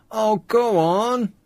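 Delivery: high, pleading, playful fake whine. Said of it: "Stop whining".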